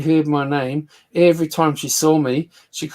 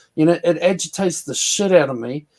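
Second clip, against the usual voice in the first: ordinary delivery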